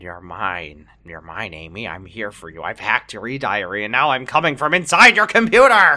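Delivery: haunting, possessed ghost-in-the-machine voice. Playing a file reaching out of a computer screen: haunting ghost in the computer. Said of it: "he's reaching out of my computer screen".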